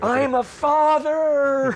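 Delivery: mock ecstatic, very high, full-throated joyful scream. Retelling shouting from the balcony after a son's birth: reenacted scream. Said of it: "I screamed to the top of my voice".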